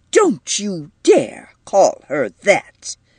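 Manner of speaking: indignant, affronted, slow, swooping delivery. Edith stops at the door and turns back to Mrs. Markey; indignant. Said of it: "her face contracting with indignation".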